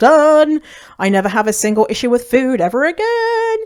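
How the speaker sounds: loud, high-pitched triumphant cry.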